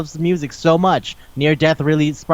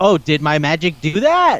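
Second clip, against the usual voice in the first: imitated shocked surprise. Retelling a scene, quoting a character: imitating a shocked character. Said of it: "he says it, like, shocked".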